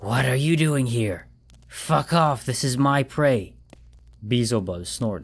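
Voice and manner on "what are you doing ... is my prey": hissed words. Narrator reads Moloch's words to his brother Beelzebub: hissing. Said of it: "Moloch hissed".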